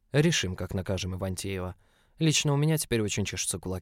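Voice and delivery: plain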